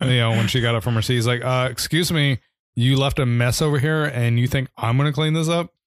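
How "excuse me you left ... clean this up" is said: put-on harsh, mean scolding tone. Retelling how a mean man scolded someone for a mess: imitating a mean man scolding. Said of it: "he was very mean".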